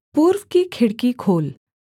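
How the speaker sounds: ordinary delivery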